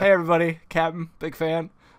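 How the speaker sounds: put-on awkward, starstruck teenage fan voice. Retelling a movie scene where Spider-Man greets everyone: awkward Spider-Man impression. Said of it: "classic seventeen-year-old kid".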